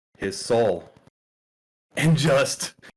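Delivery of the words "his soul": put-on flat, utterly straight-faced, dead-serious deadpan. Retelling a fighter's answer to an interviewer: imitating a deadpan delivery. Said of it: "dead serious, deadpan".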